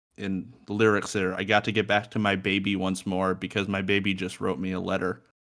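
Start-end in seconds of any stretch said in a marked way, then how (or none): none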